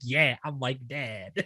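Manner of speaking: slow, smug, proud, self-satisfied. Retelling what a girl says about herself, imitating a proud girl. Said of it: "she's so proud of herself".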